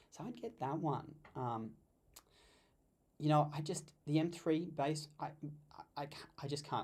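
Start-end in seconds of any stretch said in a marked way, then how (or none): 3.5-6.8 stuttering, stammering and tripping over words. Recommending laptops to viewers, stuttering. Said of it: "I'm sorry to stuttering here".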